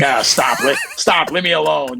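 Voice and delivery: awkward, flustered, uncomfortable, stumbling delivery. Retelling how a close friend reacts to affection: imitating Armand getting uncomfortable. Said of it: "he gets very uncomfortable".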